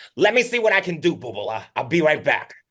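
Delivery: put-on high-pitched, loud old-lady voice. Retelling how Mona answers a request to go to the theaters, imitating Mona.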